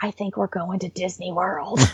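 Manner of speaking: imitated whisper. Retelling what a son said on a surprise video, imitating a whisper. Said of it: "you hear my son whisper".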